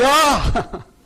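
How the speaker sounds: loud high shout. Waking the kids as the time gets close: loud shouted '야'. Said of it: "이제 목소리가 좀 커지는 거예요".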